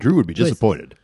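storybook narrator voice, storyteller delivery. Interjecting during a group conversation, in a narrator voice. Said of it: "That was my narrator voice".

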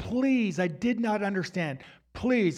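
put-on crying and pleading voice. Recounting kneeling before a wicked person, retelling crying and pleading. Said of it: "I'm just crying and pleading".

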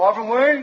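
stern angry put-on voice. Recalling his dad being mad at him in the hallway, mock-angry imitation of the speaker's dad. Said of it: "That sounds like my dad with his dad voice when he was mad at me".

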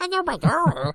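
very high-pitched puppet character voice. Retelling a brother's surprise greeting: Elmo voice. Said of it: "He surprisingly had a pretty good Elmo impression".

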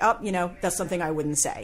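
ordinary delivery

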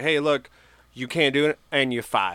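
ordinary talk

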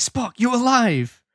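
mock thrilled, overjoyed, high, very excited exclamation. Speaker recounts a scene, voicing Kirk greeting Spock in a mock-excited Kirk impression. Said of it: "very excited".

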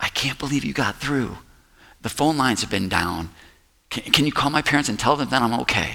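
whispered voice. Retelling a phone call during the riots: retelling a whisper. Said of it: "And I whispered into the phone".

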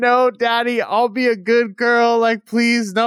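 mock begging cry, slow and drawn out. Retelling a scene where a scout screams out: imitating a scream. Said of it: "the scout is screaming out".

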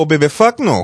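put-on heavy New Orleans accent, words run together. Imitating how a funny person talks: thick New Orleans accent. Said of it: "thickest New Orleans accent I have ever seen".

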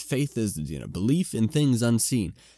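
ordinary talk, nothing marked

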